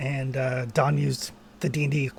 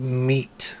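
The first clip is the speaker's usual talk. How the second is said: very deeply guttural voice. A game master voices an unseen creature one player hears, in a very guttural voice. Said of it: "you hear this very guttural voice go".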